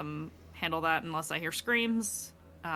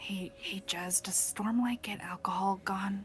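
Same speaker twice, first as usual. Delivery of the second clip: muttering under the breath, much quieter; 3 semitones higher than usual. Walking back over with water and asking Jez a question, very quietly under the breath. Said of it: "very quietly, kind of under my breath".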